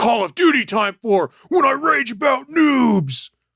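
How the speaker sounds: high, wildly swooping put-on voice. Answering a question about raging at games: Macho Man Randy Savage voice. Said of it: "sound like Macho Man Randy Savage?".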